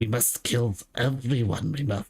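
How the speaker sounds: raspy, creepy creature voice. Suggesting a game line come out sounding funnier: raspy, creepy Smeagol voice. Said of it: "it'd be better off if you came out sounding like Smeagol".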